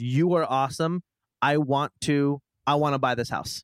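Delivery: normal talking voice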